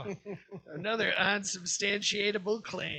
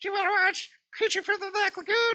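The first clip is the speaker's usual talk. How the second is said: put-on young child voice, much higher, louder; 12 semitones higher, 5 dB louder than usual. Acting out a six-year-old asking to watch an old film, super high kid voice. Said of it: "I have a super high voice because I am like six years old".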